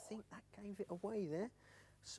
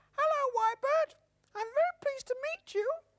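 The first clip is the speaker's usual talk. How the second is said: high, loud, squeaky puppet voice; 6 dB louder than usual. Presenting Sarah the spoon puppet, greeting the other speaker in Sarah's high, squeaky voice. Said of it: "Sarah's got quite a high, squeaky voice".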